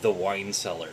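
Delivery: completely deadpan, flat, no inflection. Retelling her own reply when someone named a basement room, retelling a deadpan reply. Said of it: "completely deadpan and went".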